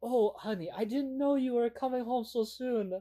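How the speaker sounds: really bad put-on English accent. Retelling a TikTok video, quoting the wife greeting her husband: really bad English accent. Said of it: "in a really bad English accent".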